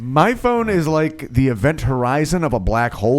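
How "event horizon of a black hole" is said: normal talking voice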